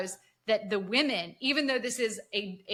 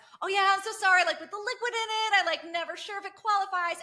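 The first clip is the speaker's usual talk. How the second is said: smiling, pitched-up, laughing, laugh-it-off tone; 10 semitones higher than usual. Retelling Harper's reply to a coworker's scolding: imitating Harper smiling and laughing. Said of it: "smiling and laughing".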